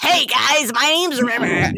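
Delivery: gravelly fake southern drawl. Doing River's voice, adding rasp: raspy River voice with Southern twang. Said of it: "add a little raspy to it".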